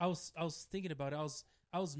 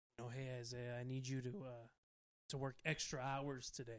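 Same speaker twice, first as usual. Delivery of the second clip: put-on shady voice, lower and quieter; 4 semitones lower, 7 dB quieter than usual. Retelling what someone at work asked: imitating a shady-sounding coworker. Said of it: "Why is this person so shady sounding?".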